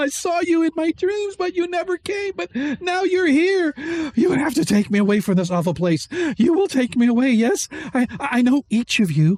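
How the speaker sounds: very high voice, crying and laughing at once. Voicing a tearful young woman pointing at Deglin: crying and laughing at once. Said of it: "She's crying and laughing at the same time".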